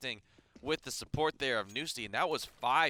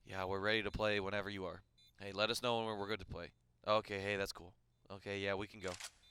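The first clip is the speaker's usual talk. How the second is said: put-on deflated, listless, low, flat droning monotone; 4 semitones lower, 6 dB quieter than usual. Speaker retelling how the frustrated players sounded, imitating their monotone. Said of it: "tone was very, very like monotone".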